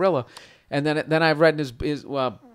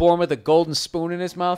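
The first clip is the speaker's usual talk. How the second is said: ordinary talk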